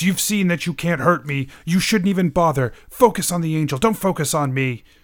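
hurried lines, called out quickly. A game master voices a fleeing man shouting down the hallway, shouting. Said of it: "And he shouts".

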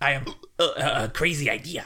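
deliberately bad put-on cartoon scientist voice. Doing an old college comedy bit: bad Rick impression. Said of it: "my rick is like the average college bad impression".

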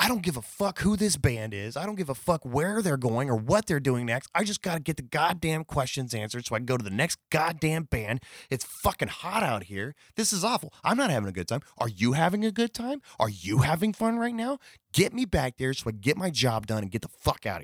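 put-on high, furious screaming rant. Retelling how a friend played an angry press guy backstage: imitating a friend screaming angrily. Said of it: "screaming so loud that you could hear it".

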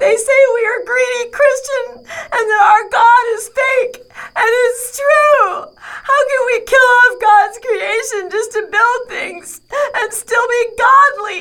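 tearful voice. Telling her daddy about kids' hate messages, crying. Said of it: "Are you crying?".

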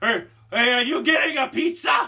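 high, shrill scream hollered out across a distance. Speaker retells yelling out to someone handing off a pizza, retelling a scream. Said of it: "I screamed out".

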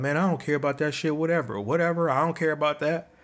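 put-on tough, dismissive, brushing-it-off bravado. Retelling past words said to hide hurt: retelling own false bravado. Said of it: "this false bravado of".

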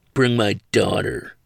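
contemptuous voice laced with disgust. Halting on his way out, a man gives an order, with disgust and contempt. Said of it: "with what could only be described as disgust and contempt".

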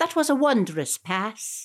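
bad put-on Irish or Scottish accent. Retelling what football commentators said today, in a terrible Irish accent. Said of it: "my terrible Irish / Scottish accent".

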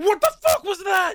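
screaming, high and loud. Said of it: "this man just starts screaming like".

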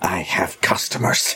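hushed, low-register whisper. At the counter with customers, Mrs. Frayne answers a parent in a lower register. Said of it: "leans down and says in a lower register".

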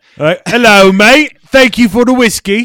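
shrill, booming fake British accent. After a few sips of a guest's scotch, thanking him: put-on British accent. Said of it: "and then you're like".

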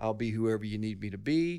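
usual speaking voice

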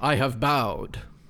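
firm, strong, clear intoned delivery. In a tabletop game, a player speaks his character's line in a strong, clear voice. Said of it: "he intones in a strong, clear voice".

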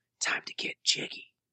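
hushed, breathy, soft whisper under the breath. Recalling a woman taking pills in the bathroom, the speaker repeats her line: whispering. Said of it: "she whispered".

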